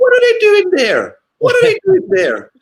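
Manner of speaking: very high, loud, squeaky shocked exclamation. Showing others how he sounds when shocked, do a high-pitched, mock-shocked Roy Keane impression. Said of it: "like the high pitched voice that he does".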